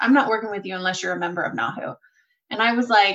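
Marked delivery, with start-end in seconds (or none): 0.0-2.0 put-on deadpan delivery. Speaker recounts a consultant's words in a meeting, retelling a deadpan remark. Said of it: "he looked me deadpan in the face and said".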